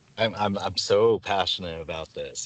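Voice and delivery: heavy, thick sarcasm with a stammered start. Answering a question about a passion, sarcastic. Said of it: "I hope you could hear the sarcasm".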